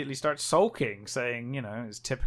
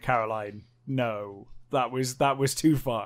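ordinary delivery

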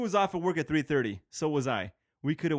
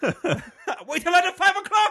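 mock angry shouting, higher and louder; 7 dB louder than usual. Retelling how a text message sounded when read: imitating a Nazi yelling. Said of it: "like a Nazi's yelling at me".

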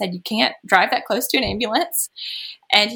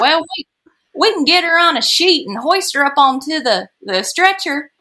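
put-on Alabama-style Southern accent, pitched up; 6 semitones higher, 5 dB louder than usual. Quoting what they said to her, using a southern accent. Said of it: "I'm using my Southern accent".

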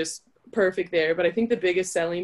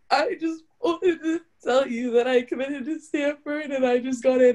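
acted crying and sniffling, much higher; 7 semitones higher than usual. Retelling what the speaker told someone on a call, retelling crying while speaking. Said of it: "I'm like crying".

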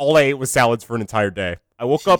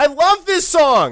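put-on very high, drunken shout; 13 semitones higher, 3 dB louder than usual. Acting out young Brandon Babcock partying at the University of Michigan in 2011, acting out a drunk partygoer. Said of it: "Because I'm drunk as hell!".

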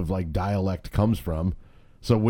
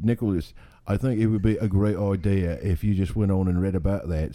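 put-on British accent. On a podcast where everyone must use british accents, addressing another speaker in a british accent. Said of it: "we can only use British accents".

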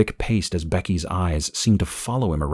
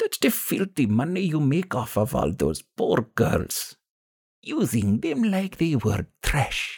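put-on rough, gravelly, very high old woman's voice, broken English; 9 semitones higher than usual. An old woman confronts a man offering her money, in gravelly broken english. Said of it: "An old woman in a dark brown dress barged across the threshold, ... The old woman's gravelly voice jolted [name]. ... She stopped next to [name] and spoke in broken English".

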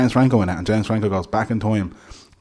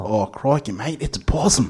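amateur, put-on Australian accent; 3 semitones higher, 3 dB quieter than usual. Asked to say it in an australian accent, giving it a go. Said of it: "Can you say that in an Australian accent?".

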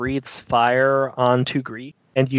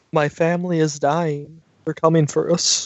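sorrowful, lamenting dragon voice; 3 semitones higher than usual. Voicing a dragon warning that they are coming: quietly speaking sad dragon. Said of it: "it just quietly speaks as it's saying this".

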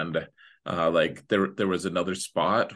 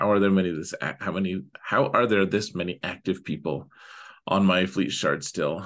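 ordinary talk

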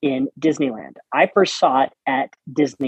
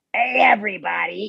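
put-on harsh comedian voice, higher pitch; 6 semitones higher than usual. Imagining the Tiki Room MC greeting everybody: Gilbert Gottfried voice. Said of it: "with Gilbert Godfrey's voice".

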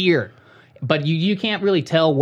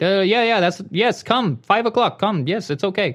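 put-on Indian English accent, pitched up; 5 semitones higher than usual. Retelling what a car seller said on the phone: imitating an indian accent. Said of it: "Why does he sound Indian?".

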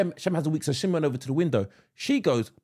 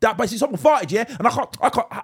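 high, put-on street slang voice. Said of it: "he started talking like".

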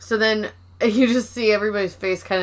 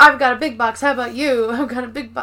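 put-on excited childlike voice; 3 semitones higher, 4 dB louder than usual. Retelling a cold open where a box is delivered: Michael's super excited voice. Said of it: "Michael comes out super excited, like a kid at Christmas".

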